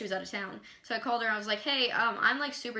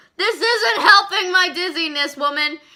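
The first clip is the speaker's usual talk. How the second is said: shrill, very high, very loud pained scream; 9 semitones higher, 14 dB louder than usual. Retelling being on the phone with a woman, acting out screaming at her. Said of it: "like screaming".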